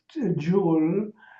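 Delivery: ordinary delivery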